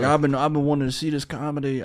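put-on Louisiana accent. Quoting a guy visiting from Georgia, in a put-on Louisiana accent. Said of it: "make him sound like he's from Louisiana".

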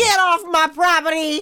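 nasty, very loud, high Texan cowboy holler. Playing the dodgy fella riding a cowboy horse: nasty texan uncle voice. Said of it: "You look like a really nasty Texan uncle".

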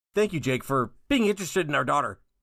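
cartoon dad voice with an odd pause mid-line. Fan sharing a favorite line from the show, imitating Bob's line delivery. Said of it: "because of Bob's line delivery".

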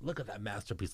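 quiet whisper. Retelling how Larry whispered to Nate at a seminar: imitating Larry whispering. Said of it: "he whispers to Nate".

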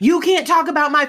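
high, sobbing, screaming, yelling outburst. Recalling a lunch clip where someone got mad, imitating yelling and scream-crying. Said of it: "She starts yelling and like scream crying".

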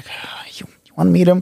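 begrudging, grudging tone. Retelling a show scene, imitating a begrudging reply. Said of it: "begrudgingly, he's like".

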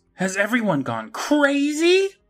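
put-on yell, very high, swooping, stretched long. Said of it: "Mom yells".

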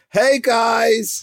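very high, strained, with guys drawn out. Repeating the greeting so the other speaker can hear it, in a strained voice. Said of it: "You sound so strained".

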